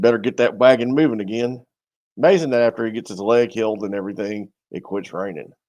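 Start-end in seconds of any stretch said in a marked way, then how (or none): 0.0-1.6 loud put-on American Southern accent. Doing every character in one accent, the speaker voices one in a Southern accent. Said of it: "a Southern accent".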